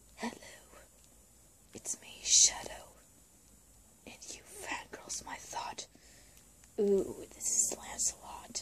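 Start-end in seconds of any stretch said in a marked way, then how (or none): 0.2-5.9 dead serious whispered character voice. Showing off a toy figure and speaking as it: serious Shadow voice. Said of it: "he's really serious".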